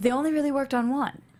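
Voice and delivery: heavy, intense, dramatic voice. Showing the other speaker how to read a line, in an intense voice. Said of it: "intense voice".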